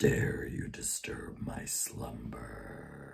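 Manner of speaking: low, slow breathy whisper. After announcing an Aladdin impression, the speaker does the Cave of Wonders voice. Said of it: "now I'm going to try the Cave of Wonders from Aladdin".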